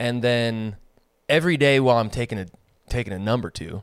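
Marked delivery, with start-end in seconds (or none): 3.2-3.8 strong emphasis on the word "number". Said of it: "How come you put the emphasis on the number".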